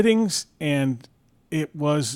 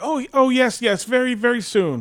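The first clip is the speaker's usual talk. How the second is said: frightened voice, higher; 9 semitones higher than usual. Retelling the dentist's reply after being scared: imitating a scared dentist. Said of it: "I scared my dentist".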